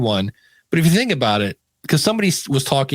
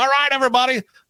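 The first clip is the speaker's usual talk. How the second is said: put-on baseball announcer voice, higher pitched; 11 semitones higher than usual. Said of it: "why does that sound like Harry Carey?".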